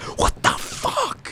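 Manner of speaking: angry, outraged whispered exclamation. Retelling how a guy reacted to a passing couple: imitating an angry exclamation. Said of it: "Like that".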